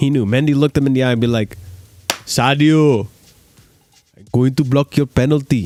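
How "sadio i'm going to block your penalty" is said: worst-ever put-on Senegalese accent, slow. Acting out Mendy telling the penalty taker he will block it, bad Mendy impression, Senegalese accent. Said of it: "probably the worst Senegalese accent".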